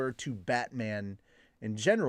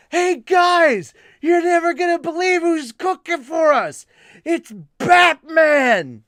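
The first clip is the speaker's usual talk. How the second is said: very high holler with one word drawn out; 13 dB louder than usual. Retelling how a fellow worker announced to the guys who was cooking, retelling a shout. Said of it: "And he just shouts out".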